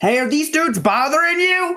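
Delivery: very high, loud shouted call. Voicing a character calling out to a passing rider: character yelling to a stranger. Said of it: "Blythe yells out to the woman".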